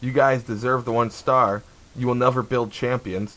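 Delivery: ordinary delivery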